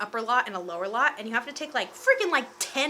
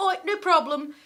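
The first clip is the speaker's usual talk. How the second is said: put-on English accent, slower; 6 semitones higher, 6 dB louder than usual. Speaker retells a man's reply to a refused photo request, in an English accent. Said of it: "Could you tell that was an English accent?".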